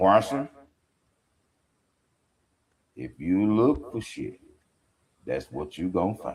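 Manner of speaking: very deep, put-on grandma voice. Quoting what a woman she misses used to tell her, imitating her deep voice. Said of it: "her voice was damn deep".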